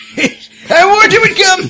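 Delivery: unhinged raving sailor voice, very high, very loud. Reading a crazy sailor's blog post aloud in a crazy sailor voice. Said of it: "I'm gonna do my crazy sailor voice".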